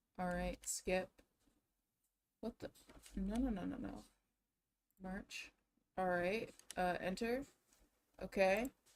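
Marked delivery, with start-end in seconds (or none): 2.4-4.1 quiet, rushed, frantic panicking voice. Struggling to post a tweet, the speaker is panicking. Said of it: "I'm panicking because I can't figure out".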